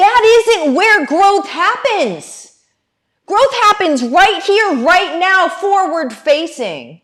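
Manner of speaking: very high, fired-up, amped-up shouting. Speaker talking to their audience about growth: yelling. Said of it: "I'm going to stop yelling".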